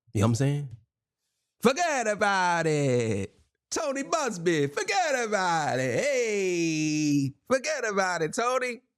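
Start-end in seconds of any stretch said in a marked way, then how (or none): 1.6-8.7 put-on Italian accent, very slow and swooping. Joking to viewers, saying forget about it to Tony Busby: put-on Italian accent. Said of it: "I'm trying to sound Italian".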